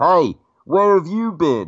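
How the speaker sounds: put-on high English accent. Retelling a film-set moment as the actor calls out from inside the mask, english accent. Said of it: "talking with this English accent".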